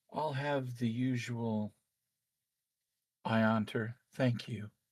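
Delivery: echoey voice, sounding as if behind a mask. A seated man answers the proprietress, in kind of an echoey voice. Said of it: "you hear in kind of an echoey voice".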